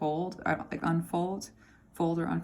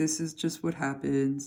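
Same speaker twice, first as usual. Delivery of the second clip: put-on resigned donkey voice, lower; 3 semitones lower than usual. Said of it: "this Eeyore sounding voice that is, like, really resigned".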